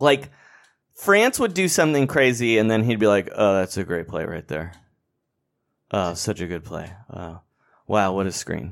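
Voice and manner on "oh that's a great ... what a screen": put-on fake-frightened commentator voice, lower and quieter. Retelling how a commentator called a game: imitating Tom Thibodeau hiding scared. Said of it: "sounded like he was locked in someone's closet calling the game".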